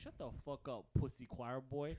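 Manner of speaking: put-on thick Mexican accent. Retelling what a kid used to tell them, the speaker quotes him in a thick Mexican accent. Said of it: "a very thick Mexican accent".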